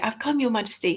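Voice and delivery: keen and eager. Reading a play's line after explaining its stage direction, Edmund's line eagerly. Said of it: "so eagerly".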